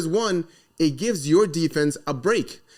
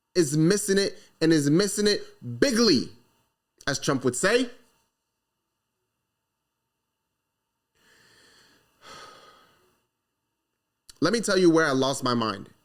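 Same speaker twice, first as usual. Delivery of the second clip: growing frustration, getting a little fed up. Speaker criticizing their team's offensive coaching staff, getting frustrated. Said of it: "starting to get a little bit frustrated, show that in my voice".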